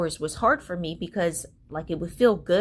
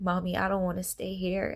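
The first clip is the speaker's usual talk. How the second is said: put-on crying child voice, pleading; 5 dB quieter than usual. A mother retells her daughter's words in the lobby, imitating a crying child. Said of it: "she just starts crying".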